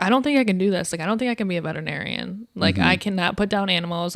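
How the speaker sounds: ordinary talk, nothing marked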